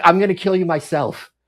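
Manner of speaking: put-on frantic, panicked, freaked-out outburst. Retelling a wife's reaction after her husband was shot: imitating someone freaking out. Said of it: "she's freaking the hell out".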